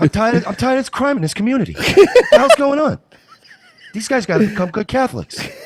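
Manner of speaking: very high, very loud, concerned rant. Answering a request to be Mark Wahlberg as a concerned citizen filming bikers: Mark Wahlberg impression. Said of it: "can you please do an impression of Mark Wahlberg being a concerned citizen".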